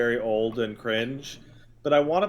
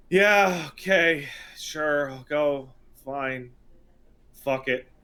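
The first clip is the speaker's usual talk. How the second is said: slow, fed-up, can't-be-bothered, resentful reluctance. Acting out the hero answering a quest request: imitating a resentful, fed-up Geralt. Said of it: "resentful of the quest that he has".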